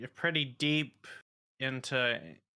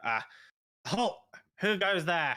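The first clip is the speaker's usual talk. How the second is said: high, shouted goblin voice; 5 semitones higher, 4 dB louder than usual. Narrating a scene, the speaker voices a goblin behind a wall, goblin yelling. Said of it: "and a goblin yells".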